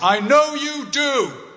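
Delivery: mock very high, loud call. Retelling what the dad said as the speaker was leaving: loud voice. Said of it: "in a loud voice".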